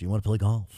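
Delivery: put-on Midwestern voice. Imitating how he talked, so Midwestern: Midwestern Carson voice. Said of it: "He's so American, he's so Midwestern".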